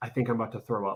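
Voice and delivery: soft, hushed stage whisper. Retelling what she said during a timed challenge: imitating a half-whisper. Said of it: "she looked at me and she whispered".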